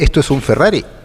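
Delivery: plain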